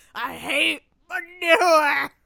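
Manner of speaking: loud bellow, pitched high. Quoting Back to the Future 3, doing a Mad Dog Tannen impression. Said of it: "That's my best Mad Dog Tannen impression".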